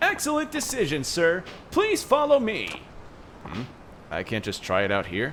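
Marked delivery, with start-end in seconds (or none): 0.0-2.8 shrill, very high, very loud showy delivery. Voicing a game character in a loud Billy Mays voice. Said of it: "am I too loud with that Billy Mays voice".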